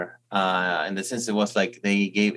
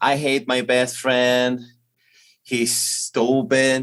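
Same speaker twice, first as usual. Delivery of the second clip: heavy, slow, put-on American accent; 3 semitones higher, 3 dB louder than usual. Quoting an American comedian's opening line: imitating a very American accent. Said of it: "imitate him with a very American accent".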